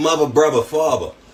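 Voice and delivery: high Baltimore accent. Saying a word list for an accent challenge, in a Baltimore accent. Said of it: "it's the Baltimore accent challenge".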